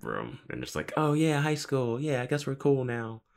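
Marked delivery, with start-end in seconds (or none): 0.9-3.2 put-on high, slow, sweet cutesy girl voice. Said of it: "Willow says something cutesy".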